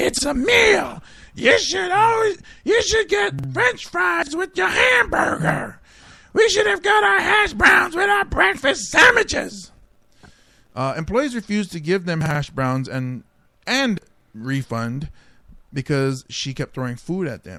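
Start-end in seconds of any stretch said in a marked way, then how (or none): 0.0-9.7 very high, put-on woman's voice. Reading out a woman's quote from a news story: female [name] voice. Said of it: "female [name] voice".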